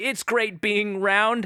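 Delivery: very high, loud, slow voice. Doing an impression of the bagel after being asked: Everything Everywhere All at Once bagel impression. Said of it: "Do an impression of the bagel".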